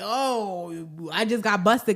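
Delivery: slow, caught-out tone with long drawn oh. Retelling how the dad reacted on being seen: imitating a caught-out attitude. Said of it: "kinda attitude".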